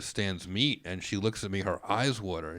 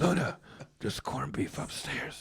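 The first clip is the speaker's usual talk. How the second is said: hushed whisper; 6 semitones higher than usual. Retelling sneaking the dog upstairs late at night: imitating own whisper. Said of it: "I whisper to this dog late at night".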